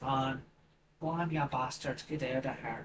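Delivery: fake Irish accent, laid on thick. Acting out a quoted shout at others, the speaker uses a put-on Irish accent. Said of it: "I gave it the Irish accent".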